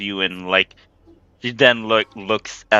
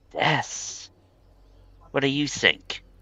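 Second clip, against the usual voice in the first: gentle, hushed, soft, breathy, light voice; 5 semitones higher, 7 dB quieter than usual. A game master voices a woman answering a player's question, said with a smile. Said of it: "she just says with a smile".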